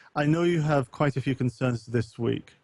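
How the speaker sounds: ordinary talk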